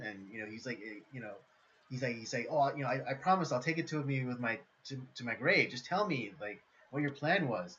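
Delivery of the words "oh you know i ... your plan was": ordinary delivery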